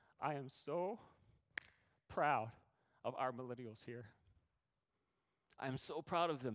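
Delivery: tearful, choked-up, crying through the words. Addressing Tiffany, crying and unable to stop. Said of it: "I said I wouldn't cry, but I can't stop".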